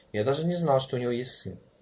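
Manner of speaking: ordinary delivery, nothing marked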